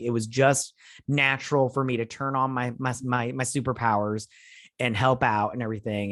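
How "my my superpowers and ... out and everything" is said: ordinary talk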